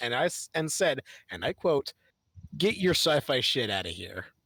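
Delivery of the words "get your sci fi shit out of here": mock deadpan delivery. Quoting a man's answer to the speaker's question, imitating a deadpan reply. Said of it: "looked at me with the deadpan expression".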